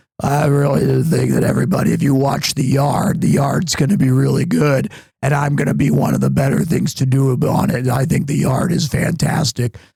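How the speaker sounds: acted-out strained, struggling asthmatic voice. Retelling own past words said while having asthma: imitating own voice with asthma. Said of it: "when I did have asthma".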